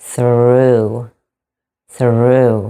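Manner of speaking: through deliberately stretched out, slow and drawn-out. Pronunciation lesson, modeling a word for learners to repeat, slow pronunciation. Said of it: "say it slowly".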